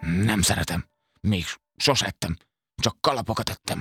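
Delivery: grumbled, muttering, complaining tone. A hat-eating creature answers a boy's question, grumbling. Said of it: "Morgott Torzomborz kalapevő".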